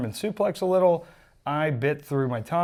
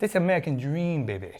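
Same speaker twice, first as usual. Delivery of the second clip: wrestling legend promo delivery. Answering a request for a Dusty Rhodes impression: Dusty Rhodes impression. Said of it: "Do you have a good Dusty impression".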